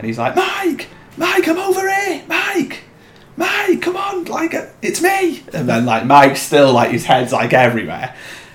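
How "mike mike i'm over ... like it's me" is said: very high-pitched desperate shout. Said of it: "shouting his name".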